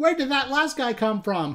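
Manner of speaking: really rattled, upset, distressed tone. A player reacting after losing all their souls in the game, upset. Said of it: "I'm so upset right now".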